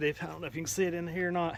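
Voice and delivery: ordinary talk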